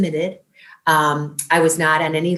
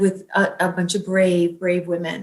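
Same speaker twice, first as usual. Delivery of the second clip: ordinary talk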